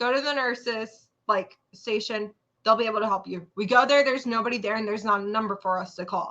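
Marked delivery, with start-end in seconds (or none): 0.0-3.5 mock unruffled, composed, motherly, very calm voice. Retelling what mom said on the phone: imitating someone speaking very calmly. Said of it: "very calmly".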